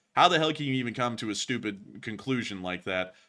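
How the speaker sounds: ordinary talk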